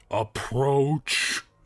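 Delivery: echoing, lingering, commanding voice. Reading a story aloud, voice the command that calls out in a booming voice. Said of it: "A booming voice calls out".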